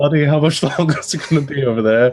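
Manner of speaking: drawn-out, high calling out. Playing a character who calls out to a busy companion: calling out across the room. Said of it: "I'm just gonna call and be like".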